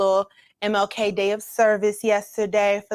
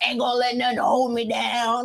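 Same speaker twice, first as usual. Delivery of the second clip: mocking, teasing imitation; 3 semitones higher, 3 dB quieter than usual. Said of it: "you said".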